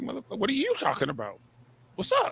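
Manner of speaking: very high-pitched, swooping, mocking tone. Retelling a reply to upset scammers: retelling own mocking retort. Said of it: "I'm like".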